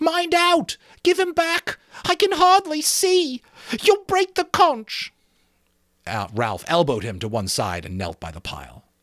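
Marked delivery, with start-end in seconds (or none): 0.0-5.1 terrified shriek, higher pitch. Reading a story aloud, a boy whose glasses are snatched: shriek of terror. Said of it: "His voice rose to a shriek of terror".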